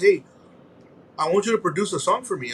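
ordinary delivery

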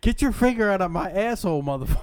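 mock, shouted, high-pitched angry yelling outburst. Picturing a fighter on replay footage: imitating someone yelling. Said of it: "we will see him yell".

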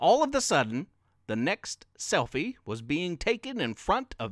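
ordinary delivery

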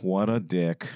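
very low, tired, lazy-sounding voice. Discussing how a voice role could be done, the speaker tries a Jeff Daniels tired lazy-guy voice. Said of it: "like lazy guy".

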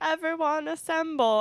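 high robotic announcer voice. Retelling how the home assistant Athena calls everyone together: Athena robot voice. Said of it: "in this robot voice".

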